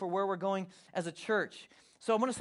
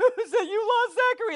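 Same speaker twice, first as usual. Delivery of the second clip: put-on panicked crying, much higher, louder; 9 dB louder than usual. Speaker recalls the family losing Zach at SeaWorld, retelling own crying panic. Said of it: "I'm like crying".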